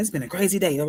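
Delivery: words rushed together at high speed. Showing how saying a poem's line fast changes its feel: said really fast. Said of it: "if I say it really fast".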